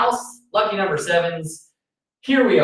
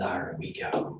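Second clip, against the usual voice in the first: put-on pirate voice, quieter. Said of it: "You don't like my pirate voice?".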